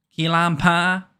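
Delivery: put-on Southern American accent. Speaker shows off a Southern accent, playing Cletus. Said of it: "How good's my Southern accent?".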